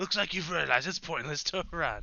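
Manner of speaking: loud anime rival voice. Reading a fighter's game line aloud: Vegeta voice. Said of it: "I just wanna do the Vegeta voice once".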